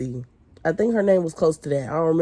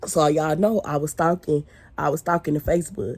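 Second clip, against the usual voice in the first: ordinary delivery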